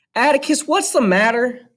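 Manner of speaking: voice climbing out of control, very high. Reading a son's question to his father: voice rising uncontrollably. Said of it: "His voice rose uncontrollably".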